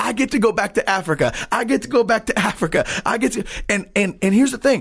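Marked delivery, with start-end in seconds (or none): 0.0-3.4 repeated screaming cry, acted out. Retelling how a healed man ran around the room: imitating a man screaming. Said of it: "all he's screaming is".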